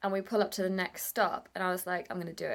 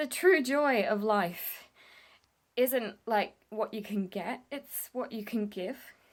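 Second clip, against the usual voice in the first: voice catching, choking up, on the verge of crying; 3 semitones higher than usual. Speaker shares a moving realization and starts to tear up: on the verge of crying. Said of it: "I'm gonna cry".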